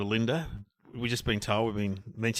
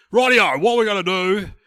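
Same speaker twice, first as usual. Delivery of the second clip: high, loud, booming, shrill take-charge bossy voice; 10 semitones higher, 13 dB louder than usual. Speaker retells how a guy turned up, in a big loud boss voice. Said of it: "with the big loud boss voice".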